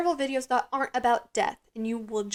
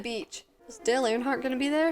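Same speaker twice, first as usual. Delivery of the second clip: ordinary talk, nothing marked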